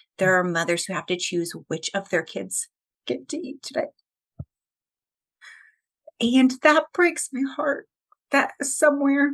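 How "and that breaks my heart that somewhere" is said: emotional voice, high-pitched and slow. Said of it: "sorry, I get super emotional talking about this".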